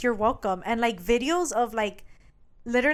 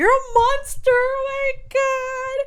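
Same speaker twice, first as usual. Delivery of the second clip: put-on very high, very slow, panicked sobbing wail; 6 dB louder than usual. Retelling a scene where she starts crying and hyperventilating: imitating crying panic. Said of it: "She starts crying, hyperventilating".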